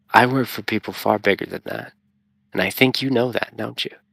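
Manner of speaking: hushed, threatening, menacing whisper. Playing out a scene, leaning in real close to him and whispering. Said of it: "I'm gonna whisper him".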